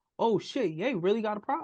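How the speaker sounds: normal talking voice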